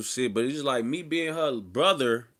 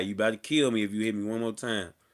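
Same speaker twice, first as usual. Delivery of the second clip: normal talking voice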